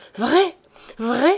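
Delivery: excited, joyful exclamation. A woman hears a man's news and answers, crying out.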